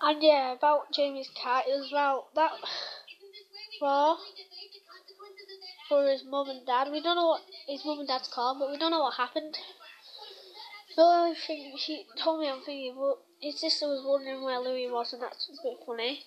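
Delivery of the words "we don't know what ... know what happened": talking really fast, rattled off. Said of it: "sorry if I'm talking really fast".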